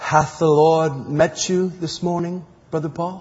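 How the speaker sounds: put-on soft Norwegian accent. Recalling a woman who looked him in the eye and asked him, soft Norwegian accent. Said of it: "says real softly in her Norway accent".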